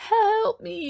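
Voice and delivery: put-on trembling, very high-pitched voice. Retelling how Mark pleaded, imitating Mark's shaking voice. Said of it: "did you hear like the shaking in his voice".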